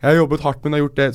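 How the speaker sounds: weepy, tearful, crying voice. Speaker mimics how the other speaker keeps imitating them, mimicking the other's imitation. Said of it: "sånn som du driver og imiterer meg".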